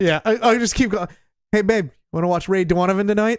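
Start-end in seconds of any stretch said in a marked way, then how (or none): 1.5-3.4 terrible put-on Boston accent. Asked to hear it, the speaker shows the accent used around Mandy: Boston accent. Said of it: "doing the Boston accent".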